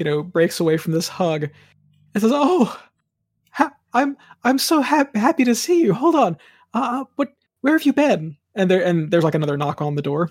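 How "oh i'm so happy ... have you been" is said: tearful, much higher, slower. Narrating a scene, voicing your mom as she breaks away from a hug, tearful. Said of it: "your mom kind of like tearfully".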